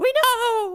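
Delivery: squeaky, very high voice. Playing a Marine confronting a pirate, speaking in a very high voice. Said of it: "we're Marines with very high voices".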